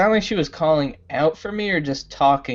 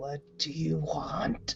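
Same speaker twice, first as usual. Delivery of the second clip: grumbling through gritted teeth, quieter; 12 dB quieter than usual. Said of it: "like the Grinch, like, grinding his teeth".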